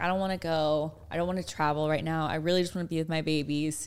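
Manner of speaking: ordinary delivery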